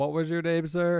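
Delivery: ordinary delivery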